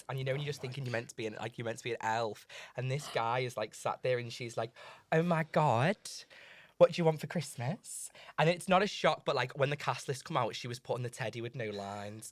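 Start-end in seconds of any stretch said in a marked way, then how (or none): 5.1-8.1 put-on Essex accent. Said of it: "she did this like Essex accent".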